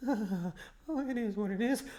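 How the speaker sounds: high, very slow, trembling, shaky voice. Commentating on a player at very low health, imitating a shaking voice. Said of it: "His voice is shaking like".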